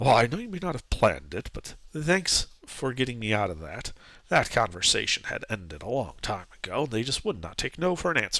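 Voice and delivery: words kept down low. Turning to Giuseppe and the priest as they split off, speaking in a low voice. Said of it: "he says in a low voice".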